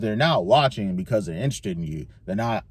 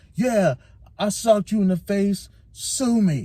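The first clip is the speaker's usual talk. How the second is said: put-on, very high-pitched, aggressive screaming; 11 semitones higher than usual. Retelling how a man screamed at his former manager, mock screaming aggressively. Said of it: "literally screams at him like".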